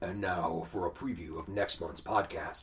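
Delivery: very slow film trailer announcer voice. Introducing a preview of next month's podcast: movie trailer voice. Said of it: "I'm not going to do the whole thing in a movie trailer voice".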